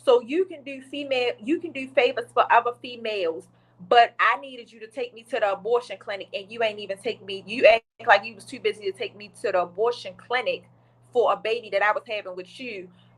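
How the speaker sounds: plain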